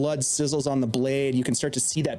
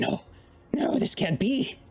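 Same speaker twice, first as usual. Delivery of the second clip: whispered, pitched up; 7 semitones higher than usual. Storyteller voices Mona as she looks over and speaks, whispering. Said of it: "she whispers".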